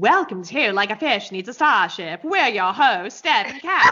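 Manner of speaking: put-on transatlantic, mid-Atlantic accent. A host, asked by the other host for their best, tries a transatlantic accent. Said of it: "Give us your best transatlantic accent".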